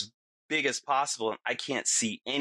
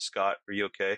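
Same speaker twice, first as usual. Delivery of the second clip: utterly relaxed, unbothered, mellow, calm, low voice; 4 semitones lower than usual. Retelling how, amid his screaming, one man turned to ask scott: imitating a mellow calm voice. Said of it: "in the most mellow, calm voice".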